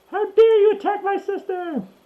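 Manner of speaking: very high-pitched shout. Voicing a character stabbing the one who attacked her sister: yelling out. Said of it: "and yells out".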